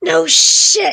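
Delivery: voiced whisper, not quiet. Describing reacting to being shot, the speaker gives a restrained stage whisper. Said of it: "So I probably whispered that".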